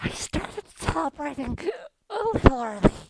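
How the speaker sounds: very loud stage whisper, meant to be heard. A game narrator voices someone whispering to a player: loud stage whisper. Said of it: "in a very loud stage whisper".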